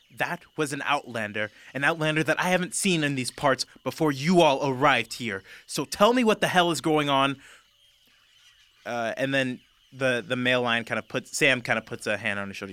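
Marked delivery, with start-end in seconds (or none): 0.2-7.4 seething put-on fury, raging, loud and shrill. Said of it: "you're raging right now".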